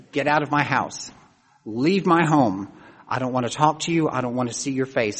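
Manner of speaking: ordinary delivery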